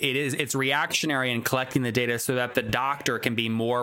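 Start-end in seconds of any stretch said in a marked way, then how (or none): none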